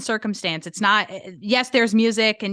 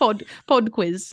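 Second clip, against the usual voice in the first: attempted, put-on British accent. Asked by the co-host to say more in a British accent: attempted British accent. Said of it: "Can you say more than just pod quiz?".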